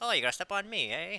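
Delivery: soft, shoddy, bad Irish accent. Speaker voices the stomped-on leprechaun logo, bad Irish accent as Lucky. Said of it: "I was a shitty Irish accent".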